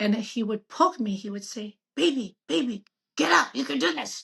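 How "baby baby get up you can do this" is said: put-on rough Filipino accent, drill-sergeant style. Recalling how their father poked them awake to train, filipino military voice. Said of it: "in his little Filipino military voice".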